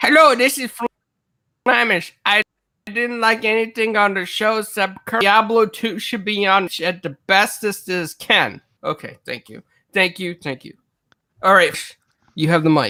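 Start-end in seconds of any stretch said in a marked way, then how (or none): 0.0-8.6 put-on slow, drawn-out voice. Imitating a co-host before handing him the mic: Flamish impression. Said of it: "Can I do a Flamish impression right now?".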